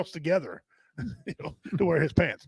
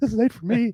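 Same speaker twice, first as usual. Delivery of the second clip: mock delighted, pleased, happy, pitched up; 5 semitones higher, 3 dB louder than usual. Retelling an audience member's reply after a joke: imitating a happy audience member. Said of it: "He's all, all happy".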